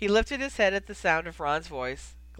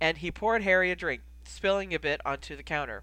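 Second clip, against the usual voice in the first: plain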